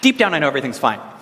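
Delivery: quick, offhand, tossed-off delivery. Acting out people who complain, then say this quickly in passing. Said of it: "they always say this really quickly and really passing by".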